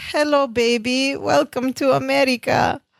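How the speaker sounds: said sweetly and gently. Retelling a TV scene where a baby cries in the car: Balki's sweet, gentle voice. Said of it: "in a very sweet, innocent, gentle voice".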